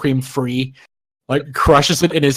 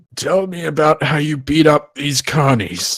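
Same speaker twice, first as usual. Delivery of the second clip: teeth-gritted, holding back. A character forcing himself to stay polite asks a question, through gritted teeth. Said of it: "gritting his teeth".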